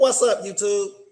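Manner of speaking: confident chest voice. Showing Max how to greet YouTube: said with your chest. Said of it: "You gotta say it with your chest".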